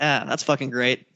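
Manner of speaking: normal talking voice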